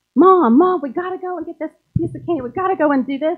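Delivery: put-on eager, high, loud, excited little-kid voice. Describing Instagram as a little kid begging a parent: imitating an excited little kid. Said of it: "Instagram is that little kid".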